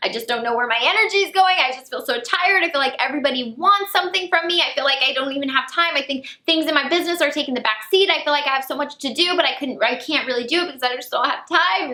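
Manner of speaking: mock weepy, high, tearful outpouring, near sobbing. Recounting breaking down when a mentor asked about their week, retelling own tearful rant. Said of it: "I started crying like a little baby".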